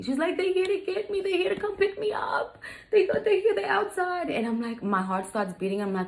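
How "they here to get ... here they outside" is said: put-on very high, sobbing, tearful, pleading child voice. Retelling how the stepdaughter woke her up: imitating a crying child. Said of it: "She's crying".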